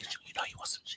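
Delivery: quick, rushed, breathy, hushed whisper. Retelling what another version of themself whispered to them: imitating a whisper. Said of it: "it was whispering to me".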